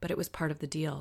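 usual speaking voice

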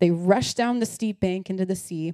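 ordinary delivery

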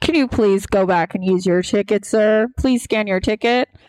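polite intercom-style announcement voice. Retelling how a man on an intercom told a rider to go back: imitating a man on an intercom.

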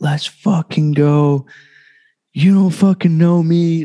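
high, pumped-up, fired-up shouting, acted out. Retelling a marathon finish push, imitating his past yelling. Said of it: "started yelling out things like".

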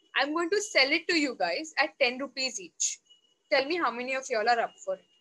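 plain

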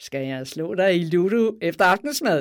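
loud, playful, mischievous line spoken through a teasing laugh. The blue snake cuts into repeated scoldings with a teasing laugh. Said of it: "med en drilsk latter".

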